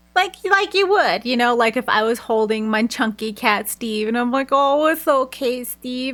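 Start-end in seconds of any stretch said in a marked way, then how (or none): 4.5-6.1 put-on slow, cooing baby talk. Showing how one talks to a pet cat: baby talk. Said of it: "kinda baby talking to it a little bit".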